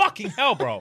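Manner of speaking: high, sudden, jolted-out scream. Retelling the moment the pain hit: retelling a scream. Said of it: "I sat the fuck up and I screamed".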